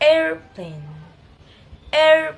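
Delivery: primary stress on AIR, AIR loud, PLANE lighter. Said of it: "pattern of secondary stress is common for compound word".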